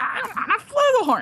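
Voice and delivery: very high, squeaky, frustrated, totally fed-up outburst. Retelling a cartoon scene, imitating Pinkie Pie's frustrated voice. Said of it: "the most frustrated voice from Pinky".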